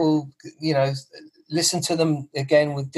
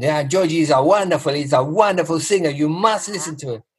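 put-on broad Greek accent, faster. Retelling how a restaurateur pushed George's tape on him, broad Greek accent. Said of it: "very broad Greek accent".

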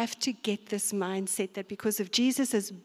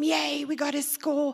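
mock, happy, drawn-out sports-fan cheering yell; 6 semitones higher, 3 dB louder than usual. Retelling running back to the TV to yell with Francis: retelling a joyful yell. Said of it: "And then I'm yelling with him".

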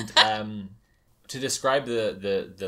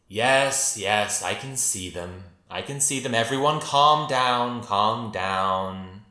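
voice of an enormous, giant woman; 3 dB louder than usual. Telling a story, voicing a woman heard among the talking cats: woman's voice. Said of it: "this woman's voice says".

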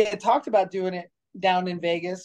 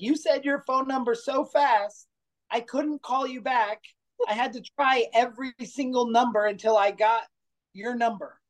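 put-on high, fussing little old lady voice, scolding, yelling; 5 semitones higher than usual. Retelling a phone call where an old lady yelled: imitating Carol yelling. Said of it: "this little old lady yelling at me".

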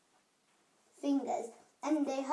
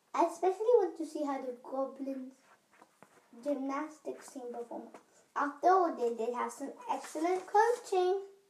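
usual speaking voice

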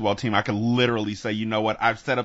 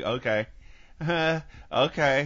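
higher-pitched, noncommittal, halfhearted delivery; 7 semitones higher than usual. Retelling their own reply to advice about taking time for themselves, like the mom from Friday. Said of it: "I sound like the mom from Friday".

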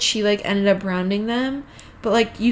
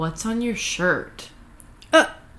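mock bitchy tone, slower. Retelling a woman's question to her, imitating a bitchy tone. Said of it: "in the most bitchy tone she's like".

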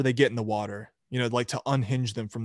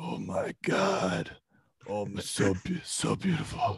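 put-on slow, hushed, breathy drunken whisper; 3 semitones lower, 6 dB quieter than usual. Retelling the interview as the interviewer keeps talking: drunk Vin Diesel impression. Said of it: "Vin Diesel drunkenly doing an interview".

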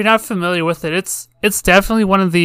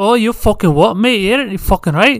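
put-on Glaswegian accent. Giving an example after being asked for an impression: put-on Glaswegian accent. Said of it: "Are you asking me to do an impression?".

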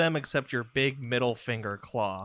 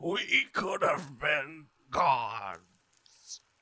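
gurgling, gargling voice through the words; 3 semitones higher than usual. Game master voices a dying character repeating his last words, gargling, dying voice. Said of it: "starts gargling in his own blood".

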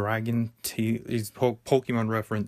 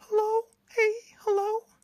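put-on voice, very high-pitched. Showing that anyone can do that voice: high-pitched put-on voice. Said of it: "anyone can do that high-pitched voice".

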